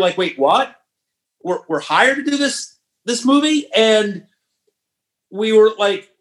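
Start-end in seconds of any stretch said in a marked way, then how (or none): 0.2-3.7 put-on stunned, stammering surprise with shocked, rising disbelief. Retelling the writers' reaction to being hired: imitating own shocked reaction. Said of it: "we were shocked".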